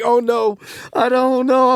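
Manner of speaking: nervous, high, rising panicky voice.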